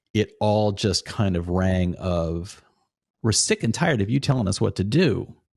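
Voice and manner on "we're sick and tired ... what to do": normal talking voice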